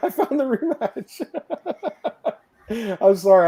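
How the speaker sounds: speaking through laughter. Announcing a found video to another speaker, laughing while talking. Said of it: "I'm laughing so hard".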